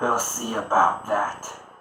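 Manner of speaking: loud, low-pitched voice. Retelling a sword fight, voicing the second fighter's reply in a lower tone. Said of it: "in a lower tone says".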